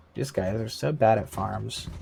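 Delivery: ordinary talk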